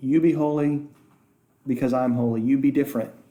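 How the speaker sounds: usual speaking voice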